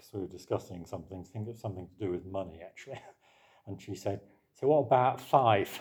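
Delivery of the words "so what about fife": Essex vowels, th fronted to f in faith. Recalling a woman speaking at a church members' meeting; Essex accent. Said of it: "somebody with an Essex accent said".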